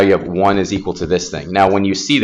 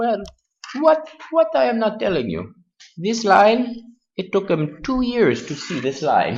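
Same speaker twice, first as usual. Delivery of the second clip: put-on very high, sing-song, swooping Hungarian accent; 13 semitones higher, 5 dB quieter than usual. You are retelling what a man would say after showing you the proof, imitating a hungarian accent. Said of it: "in his awesome Hungarian accent".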